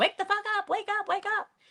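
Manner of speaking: play-acted, very high-pitched, panicked, frantic yelling. Retelling what kids in the back of the audio yelled: imitating kids freaking out. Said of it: "kind of freaking out".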